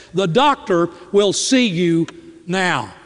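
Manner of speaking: put-on, very strong, forceful nurse voice. Nurse calling a waiting patient in from the side door, with a very strong voice. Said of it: "with a very strong voice says".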